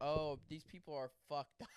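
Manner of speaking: usual speaking voice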